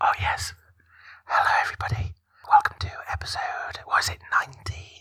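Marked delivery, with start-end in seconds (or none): 1.2-5.0 ASMR-style voice. Opening the podcast episode as asked, in an asmr voice. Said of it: "using your A S M R voice".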